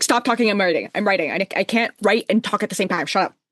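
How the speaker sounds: put-on snippy, impatient voice. Imitating Harrow telling someone to stop talking: imitating snippy, impatient Harrow. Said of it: "She's just impatient".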